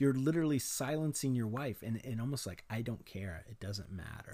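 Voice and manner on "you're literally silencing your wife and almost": usual speaking voice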